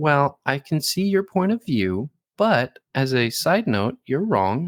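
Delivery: overly serious tone. Speaker imitating the other person during a disagreement, mimicking their changed tone. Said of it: "you change tones and everything".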